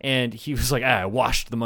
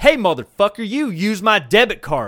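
strong, loud, hard, put-on Southern accent; 7 semitones higher, 6 dB louder than usual. Retelling a threatening voicemail from the other driver: imitating a hard Southern accent. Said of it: "comes in with a hard Southern accent".

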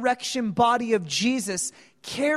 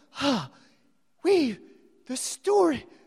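mock panting, put-on out-of-breath delivery; 3 semitones higher than usual. Retelling disciples arriving after running seven miles: imitating being out of breath. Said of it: "Just out of breath".

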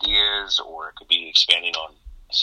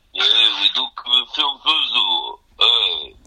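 put-on mumbling tough-guy voice, higher; 4 semitones higher, 4 dB louder than usual. Quoting a festival co-founder: Sylvester Stallone impression. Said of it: "That sounded nothing like Stallone".

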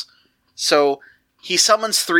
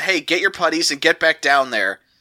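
ordinary talk

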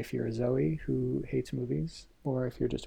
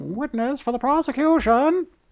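put-on very high, very loud old-timey vintage radio voice; 13 semitones higher, 10 dB louder than usual. Asked by the other speaker to do it, old-timey radio voice. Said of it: "Do your old-timey".

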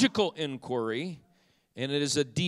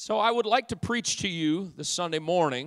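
ordinary delivery

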